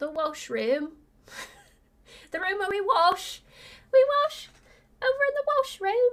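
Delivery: jokey put-on British accent. Talking to followers on a video, in a put-on british accent. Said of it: "I just felt like being, you know, British".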